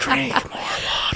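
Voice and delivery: calm, soft, hushed, breathy whisper. Retelling what a woman whispered while pushing on their quads, retelling a whisper. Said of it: "she whispers".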